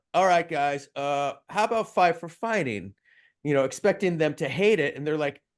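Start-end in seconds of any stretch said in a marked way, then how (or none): 0.1-2.9 mock sarcastic, swooping, carelessly tossed-out delivery. Retelling suggesting a band name to the others: retelling a sarcastic line. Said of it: "I sarcastically spit out".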